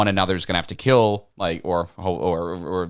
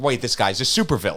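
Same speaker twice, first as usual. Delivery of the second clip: ordinary delivery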